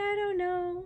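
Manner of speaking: high, bewildered, puzzled tone. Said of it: "And she's like".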